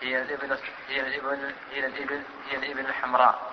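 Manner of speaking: ordinary talk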